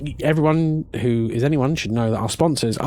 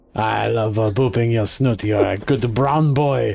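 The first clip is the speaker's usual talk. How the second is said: put-on French accent; 3 semitones lower than usual. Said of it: "so I'm doing a French accent".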